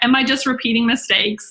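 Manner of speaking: usual speaking voice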